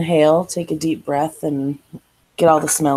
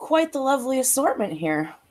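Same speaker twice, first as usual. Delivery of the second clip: put-on soft, high, Irish-accented young woman's voice; 8 semitones higher, 7 dB quieter than usual. Narrator voicing the young lady who came from the back of the shop, in an irish accent. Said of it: "she has an Irish accent".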